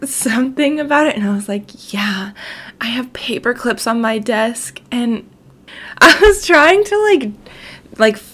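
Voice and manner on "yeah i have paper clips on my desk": playful, fake seductive come-on voice. Retelling a joke about office supplies: imitating fake dirty talk. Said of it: "fake dirty talk about, like, office supplies".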